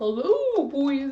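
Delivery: cute and funny character voice. Showing the voice the kids still love, greeting the boys as Mister Egghead. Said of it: "a really cute, funny voice".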